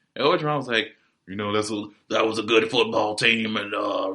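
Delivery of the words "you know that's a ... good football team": put-on, deep, drawling Southern accent. Quoting a coach after a win, imitating Ed Orgeron, deep Southern drawl. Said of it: "the deep Southern drawl".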